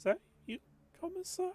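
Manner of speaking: small inner voice. Running a game scene, voicing what the player hears in their head: small voice. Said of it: "a small voice in your head say that says".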